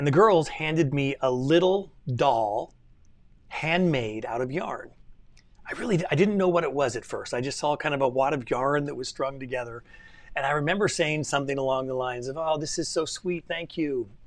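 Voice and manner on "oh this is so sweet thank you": put-on syrupy, over-sweet, saccharine tone. Retelling thanking daughters for a handmade gift: imitating a saccharine tone. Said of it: "with that same saccharine tone".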